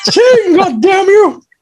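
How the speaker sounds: put-on evil cartoon mouse voice. Imitating a cartoon character heard in one's head: evil Mickey voice from South Park. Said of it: "the evil Mickey voice from South Park".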